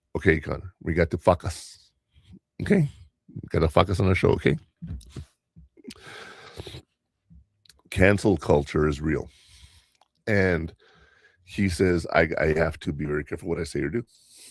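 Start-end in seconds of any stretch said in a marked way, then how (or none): 0.1-9.2 put-on very thick, heavy Spanish accent. Speaker quotes a friend from the Dominican Republic, very thick Spanish accent.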